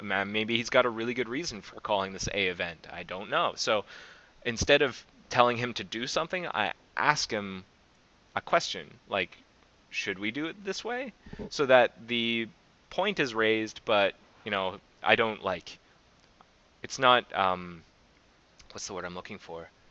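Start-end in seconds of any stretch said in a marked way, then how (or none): 9.9-11.1 high, passive delivery. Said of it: "I make it a little more passive".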